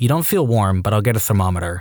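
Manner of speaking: ordinary delivery, nothing marked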